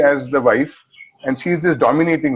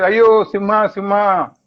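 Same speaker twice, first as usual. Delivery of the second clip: mild, high-pitched calling-out voice; 6 semitones higher than usual. Recounting a Kannada ad where a woman calls the lion, retelling a shout. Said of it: "she shouts and says".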